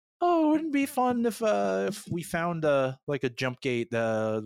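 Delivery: wistful voice, floating upward in pitch.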